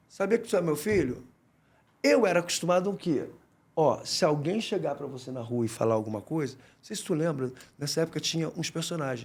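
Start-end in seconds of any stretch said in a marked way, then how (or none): 0.1-1.2 put-on lightly suggested soft-spoken, quiet-mannered older man voice. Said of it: "baixinho, o senhor baixinho assim".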